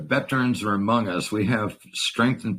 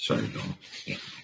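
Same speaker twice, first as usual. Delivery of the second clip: low, whispered, choked-up voice. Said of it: "I'm getting all emotional".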